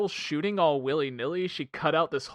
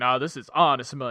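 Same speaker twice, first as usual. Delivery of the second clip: put-on poorly done Southern accent; 3 semitones lower than usual. Retelling a movie scene with a bad Sam Elliott impression. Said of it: "that's my Sam Elliott impression".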